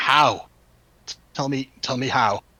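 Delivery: yelling in character voice. Waking in the burnt-out laboratory, Soren yells out to the party. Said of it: "they hear Soren just yell out".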